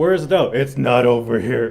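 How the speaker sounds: put-on old-man voice. Speaker imitating how he sounded on Young Indiana Jones: Indiana Jones get-off-my-lawn voice. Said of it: "his get off my lawn voice".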